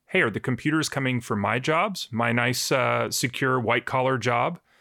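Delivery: normal talking voice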